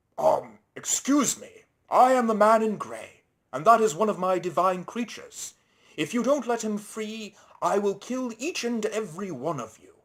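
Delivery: big booming voice, high and loud. Reading a story, Timothy speaks up to help his captured friend: big booming voice. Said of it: "a big booming voice".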